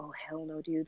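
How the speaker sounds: imitated freaked-out panicked reaction. Retelling own reaction to the principal calling mom, imitating own panic. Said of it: "And I freaked out".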